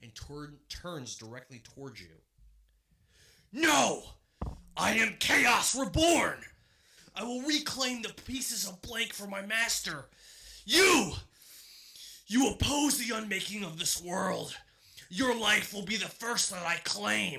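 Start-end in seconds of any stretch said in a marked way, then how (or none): 3.5-17.4 booming, echoey, shrill, furious scream. A narrator voices a creature turning on the players: echoey angry scream. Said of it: "the echoey voice screams in anger".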